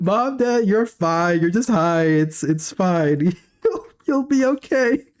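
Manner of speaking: put-on laughing voice. The speaker retells reassuring panicked parents on the phone: retelling laughing reassurance. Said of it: "I was just laughing on the phone".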